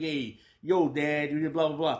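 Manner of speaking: mock streetwise tough-talking voice. Retelling how the son took on a rebellious act: imitating a streetwise tough talk. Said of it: "that streetwise".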